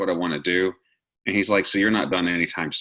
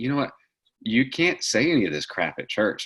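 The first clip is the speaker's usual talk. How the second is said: mock heavy sarcasm, teasing, swooping pitch; 4 semitones higher than usual. Retelling a friend's remark about saying things at church: imitating a sarcastic friend. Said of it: "he's very sarcastic".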